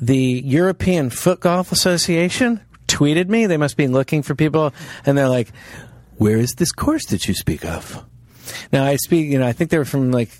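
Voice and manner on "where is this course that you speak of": deep creature voice. Retelling a tweet from the European Foot Golf Association, use a Yoda-like voice. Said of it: "I make it sound like they're Yoda".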